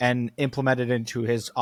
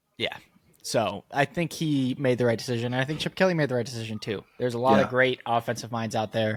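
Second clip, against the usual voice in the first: ordinary talk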